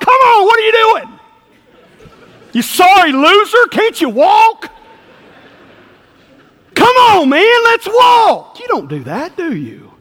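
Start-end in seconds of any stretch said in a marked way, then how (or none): 0.0-8.6 put-on very high, loud, harsh, mean taunting. Acting out a parent scolding a fallen toddler: mock harsh taunting in child's face. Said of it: "you got right in that child's face".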